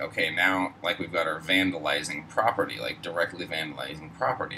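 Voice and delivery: ordinary talk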